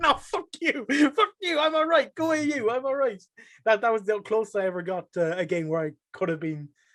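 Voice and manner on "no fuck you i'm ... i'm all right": put-on angry screaming, much higher pitch. Speaker retells screaming back at chat during Rocket League, imitating own angry screaming. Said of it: "I just like screaming back".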